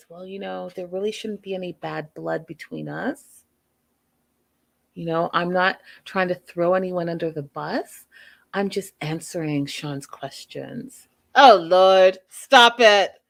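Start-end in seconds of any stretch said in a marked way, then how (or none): 0.1-11.1 put-on calm voice, pitched lower. Recapping a scene where Jesse answers Sean's questions, imitating Jesse's calm voice. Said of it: "Jesse in his calm voice says".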